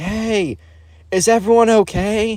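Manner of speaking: slow, drawn-out, high-pitched hollering. Retelling how someone called out after a crash: imitating someone yelling. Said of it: "kind of like a yelling of".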